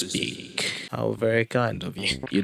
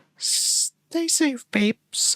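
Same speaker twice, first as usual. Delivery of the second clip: put-on voice, very high and sweet-sounding. Speaker repeats a line the way she would say it: imitating her voice. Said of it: "Let me say it in her voice".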